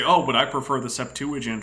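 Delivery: ordinary talk, nothing marked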